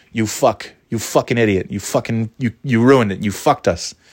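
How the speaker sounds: plain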